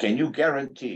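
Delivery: put-on very loud voice. Retelling what a patient's son said in the ICU: imitating a very loud voice. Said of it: "in a very loud voice".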